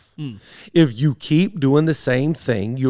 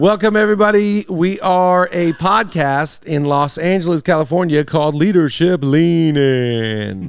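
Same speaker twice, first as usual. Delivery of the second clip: put-on, drawn-out radio announcer voice; 3 semitones higher, 3 dB louder than usual. Opening a podcast episode, the speaker does the intro in a radio announcer voice. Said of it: "why did I make that voice?".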